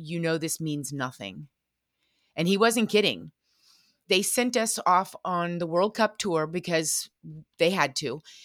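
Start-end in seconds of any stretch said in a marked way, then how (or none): 0.0-1.5 quiet, confiding, hushed stage whisper. Retelling what the federation director said while putting on a medal: imitating a half-whisper. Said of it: "he leans in and he whispers".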